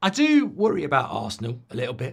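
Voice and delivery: voice cracking and breaking mid-sentence. Speaker worried about Arsenal, voice breaking. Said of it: "That's why my voice has got a bit like that".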